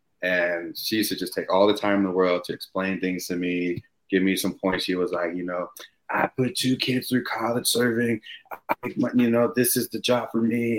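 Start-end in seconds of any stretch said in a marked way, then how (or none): 6.1-10.8 put-on raspy smoker voice, quieter. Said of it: "a smoker's raspy voice".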